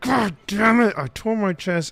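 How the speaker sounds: high, angry, frustrated outburst.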